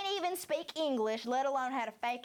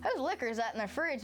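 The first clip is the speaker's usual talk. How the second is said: plain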